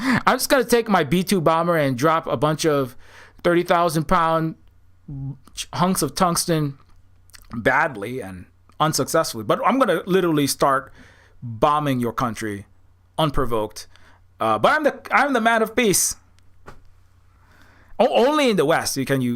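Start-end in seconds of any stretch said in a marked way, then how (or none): none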